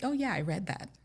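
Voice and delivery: breezy, offhand, nonchalant throwaway tone. Retelling how he admitted reading the journal: imitating a nonchalant tone. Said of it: "he's very nonchalant about it".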